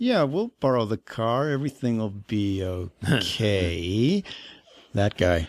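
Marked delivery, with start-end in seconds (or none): 0.0-4.2 slow, dry delivery. Showing a friend how an actor talks: Justin Bartha impression. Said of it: "he talks like this".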